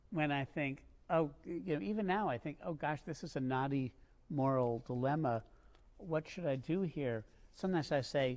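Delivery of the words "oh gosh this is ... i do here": ordinary talk, nothing marked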